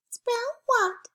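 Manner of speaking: tiny, squeaky, very high mouse voice. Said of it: "let's do it in a little mouse voice".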